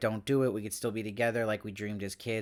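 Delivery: ordinary delivery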